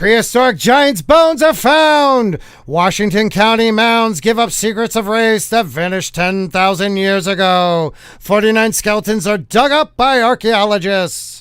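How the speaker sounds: booming 1950s newsreel announcer voice.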